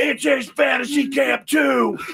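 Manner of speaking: very high, yelled, complaining, protesting scream. Retelling how Mud screamed during a game: imitating Mud screaming. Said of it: "I'll never forget Mud screaming".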